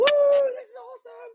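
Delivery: very high, thrilled, drawn-out excited whoop. Caught out in a thunderstorm far from home, retelling own shout. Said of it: "I'm shouting like".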